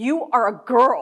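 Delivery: play-acted, loud, drawn right out, very slow. Retelling what another guy said loudly about pairing up in sleeping bags, retelling a loud declaration. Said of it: "he says it really loud".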